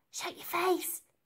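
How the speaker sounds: very high, hissed, threatening voice. An unseen voice silences Elsie after she screams for help, hissed. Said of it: "hissed an unseen voice".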